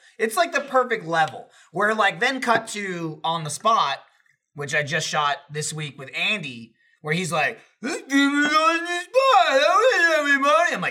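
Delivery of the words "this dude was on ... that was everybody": put-on loud, shrill, sloppy drunken slurred speech. Retelling what a drunk Andy said on a shoot: imitating Andy slurring drunk. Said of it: "He's slurring his words all over the place".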